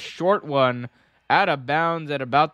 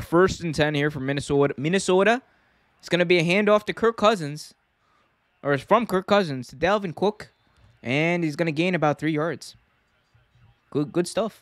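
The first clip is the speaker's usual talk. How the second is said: amateur put-on Minnesota accent, play-by-play announcer style; 3 semitones higher than usual. Calling a Minnesota football play like a commentator, in an attempted Minnesota accent. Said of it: "that's as close to a Minnesota accent as I'm gonna get".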